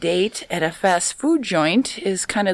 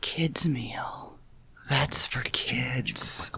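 slow, breathy, sultry near-whisper, seductive; 7 semitones lower, 11 dB quieter than usual. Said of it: "I have to try and do my sexy voice".

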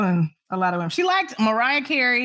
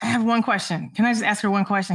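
normal talking voice

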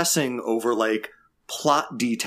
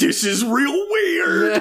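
mock, very high, shrill, loud shouted yell; 5 dB louder than usual. Retelling a scene where a technician yells: imitating a technician yelling. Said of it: "technician is just yelling".

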